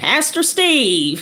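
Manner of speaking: Southern drawl, mildly called out. Showing how he always shouts a pastor's name: shouted southern drawl. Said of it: "like that. The southern drawl just kind of comes out".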